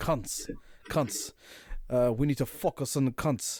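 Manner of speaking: "cans" pronounced like "cunts". Mimicking how another man pronounces a word, imitating a strong accent. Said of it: "It's just the way he says it".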